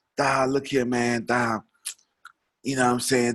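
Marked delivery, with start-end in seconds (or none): 0.2-1.6 slow, unhurried, drawn-out way of talking. Telling a listener exactly how your almost fifty-year-old cousin talked, imitating a cousin's voice. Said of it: "He talked like that".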